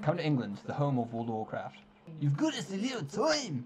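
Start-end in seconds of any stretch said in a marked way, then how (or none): 2.2-3.7 very bad fake Scottish accent, high and slow. Reading a game character's line aloud before handing the Scottish part to Sarah, bad Scottish accent. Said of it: "that's the worst Scottish accent".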